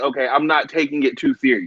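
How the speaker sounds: plain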